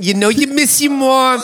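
very high, put-on New Jersey mom voice. Speaker showing how she ends up saying the line, in a Jersey mom accent. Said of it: "I always end up saying it like a Jersey mom".

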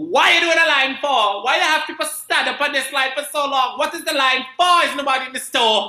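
put-on yell in West Indian accent. Retelling how the mother yelled at a guy: imitating mother yelling in West Indian accent. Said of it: "here we go again".

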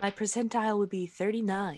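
close-mic asmr-style voice. Player reporting a percentile dice roll, in a close-mic ASMR voice. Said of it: "making you guys listen to me speak like this is ASMR".

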